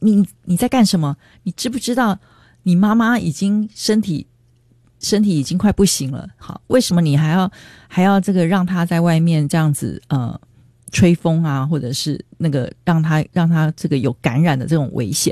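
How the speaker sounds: normal talking voice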